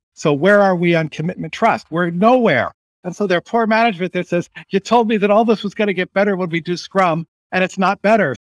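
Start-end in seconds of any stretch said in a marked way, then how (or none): 4.7-8.4 agitated, fed-up, worked-up, exasperated griping. Role-playing a frustrated manager complaining to a team: imitating an excited frustrated manager. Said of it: "I'm getting excited, but I'm just doing a role play".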